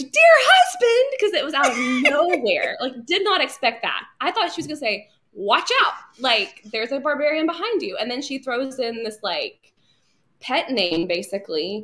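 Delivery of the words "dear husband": mock very high, loud, startled scream. Retelling how she and her mom reacted to an episode's ending: retelling a scream. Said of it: "my mom and I literally screamed".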